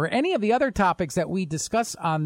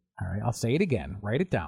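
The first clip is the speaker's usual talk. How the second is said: ordinary talk, nothing marked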